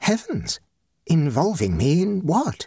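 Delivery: high-pitched, gasped out with breath pulled in. Narrator reads a woman's reply to a man, gasped. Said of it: "gasped Jocelyn".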